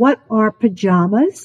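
put-on whisper. Retelling what a frightened little girl asked: imitating a whisper. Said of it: "And she whispered to me".

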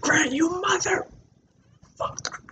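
very high, soft muttering under the breath. Retelling cursing at someone who slammed a car door on their hand, under breath. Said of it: "just like under my breath".

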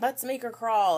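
mock yell.

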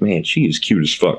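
ordinary delivery

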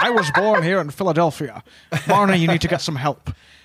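put-on Scottish accent on every word, plain talking. Retelling a movie scene where he plays a Philadelphia businessman: Sean Connery's Scottish accent. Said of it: "He's just a Scottish man saying".

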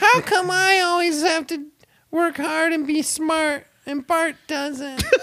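very high, pitched-way-up cartoon girl voice. Podcast hosts take turns showing impressions; this one does a Lisa Simpson voice. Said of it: "here's mine".

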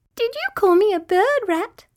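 twinkly, tinkling, very high-pitched voice. Narrator reads Butterfly speaking to Rat from a twig, tinkly twinkly voice. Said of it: "in a tinkly, twinkly voice she said".

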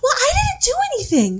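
very high, sugary, innocent, put-on sweet voice. Retelling a woman answering a police officer: put-on sweet voice. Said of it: "she's using the sweet voice like".

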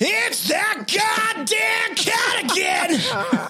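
full-throated scream, very high, slow and drawn-out. Recording a bit line, screaming at the top of lungs. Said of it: "scream at the top of my fucking lungs".

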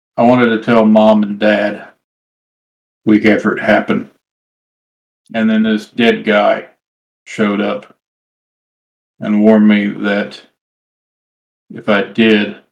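very slow, drawn-out, intense delivery. Narrating a scene, the storyteller voices Tucker's reply after a long pause: speaking very slowly. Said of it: "very slowly he says".

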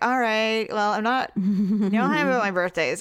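ordinary talk, nothing marked

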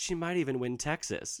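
cocky, smug, self-satisfied, know-it-all certainty. Recounting what a liberal said on election night 2016, the speaker goes mock-smug. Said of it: "you said smugly".

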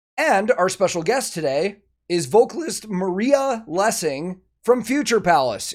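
cracked voice breaking in the middle of the sentence. A podcast host introduces today's special guest, voice cracking. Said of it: "Excuse me for the voice crack there".

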